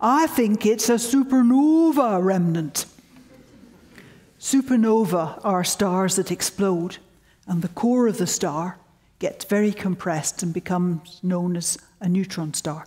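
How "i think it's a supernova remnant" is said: imitated Yorkshire accent. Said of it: "I'll imitate his Yorkshire accent".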